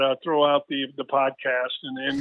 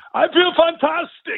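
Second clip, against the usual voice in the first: fake, very high-pitched British accent; 13 semitones higher, 3 dB louder than usual. Speaker recalls a video he made after surgery, put-on British accent. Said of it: "Is that your British accent?".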